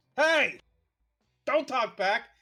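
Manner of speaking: shrill, combative, belligerent scream at very high pitch. Voicing a dog-headed man shouting at a passing car: belligerent screaming. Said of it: "screaming at you, just being belligerent".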